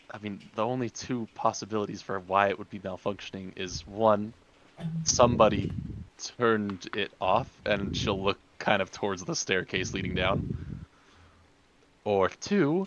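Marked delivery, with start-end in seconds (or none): 0.1-7.6 quiet, lowered, hushed, confiding voice. Speaking as a character who moves closer to everyone, in a lowered voice. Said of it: "I'll lower my voice as I get kind of closer".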